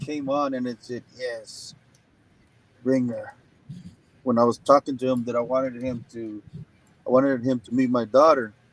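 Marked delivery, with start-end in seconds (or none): 1.2-3.3 hushed, demon-like voice. Retelling a voice heard over the phone during a call, demonic voice. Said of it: "You know how you know how a demonic voice sounds".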